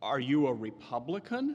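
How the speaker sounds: put-on trembling, quavering, anxious, concerned voice. Recalling a woman in town who questioned the speaker, imitating a quavering voice. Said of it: "in a sort of quavering voice said".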